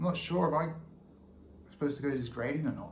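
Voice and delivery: put-on, a bit uncertain, tentative, hesitant tone. Retelling what they said to two coaches after class, sounding a bit uncertain. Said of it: "even that sounds a bit uncertain".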